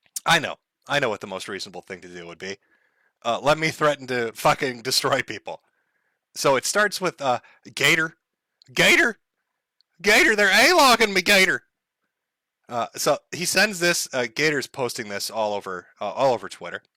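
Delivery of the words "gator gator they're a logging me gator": loud high-pitched hollering. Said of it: "He's a hollering over everybody".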